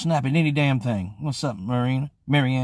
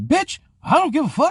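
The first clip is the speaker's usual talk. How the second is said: loud carrying roar, very high pitched, put-on; 5 dB louder than usual. Retelling what was heard from upstairs: imitating Kato's loud roar. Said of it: "he got one of them kind of voices that really carries".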